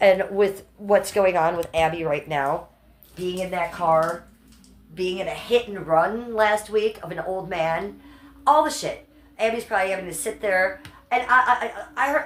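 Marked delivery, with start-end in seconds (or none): 11.1-12.3 high, upset stammering with repeats. Speaker gets upset partway through a story, stuttering, upset. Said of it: "I'm stuttering because I'm getting upset".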